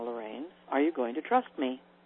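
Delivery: hushed and soft. Retelling god answering her as she cries alone while driving, very quietly. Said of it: "God's just sitting there very quietly saying".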